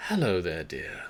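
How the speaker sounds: put-on old elf woman voice. Narrator voicing an old elven woman who looks up as they approach: elderly elven woman voice. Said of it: "an elven woman of some advanced years".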